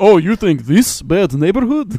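slow, drawn-out, scary put-on Russian accent. Retelling a comedian's bit about alleyways: imitating a comedian's Russian accent. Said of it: "just pretend you're Russian".

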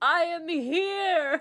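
high, loud triumphant yell, stretched out. Retelling how Shaq yells back at the girls, retelling a triumphant yell. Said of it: "he just yells back".

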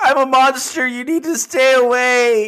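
very high, tearful, slow, stretched-out crying. Player voices a character the others are trying to help, crying. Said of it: "You can kind of hear her crying".

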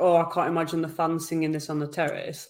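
ordinary talk

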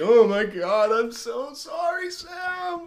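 very high, very slow, drawn-out sobbing and bawling. A dad retells apologizing to his son in a parking lot, retelling own bawling apology. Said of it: "I'm like bawling in the parking lot".

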